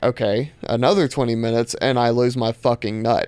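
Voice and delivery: ordinary delivery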